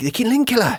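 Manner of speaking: put-on Scottish-accented speech. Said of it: "That's pretty good".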